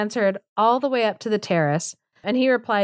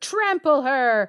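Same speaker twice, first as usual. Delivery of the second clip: loud, play-acted, yelled shouting; 4 semitones higher than usual. Retelling a fairy tale, the ogress orders the horse: imitating the ogress yelling. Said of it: "yelled at the horse".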